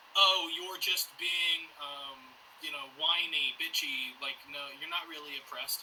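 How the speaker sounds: normal talking voice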